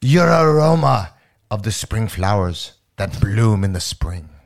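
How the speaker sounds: cartoon voice with laid-on French accent. Quoting a line written down, as asked, in French: Pepe Le Pew voice. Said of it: "In French".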